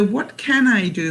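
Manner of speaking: normal talking voice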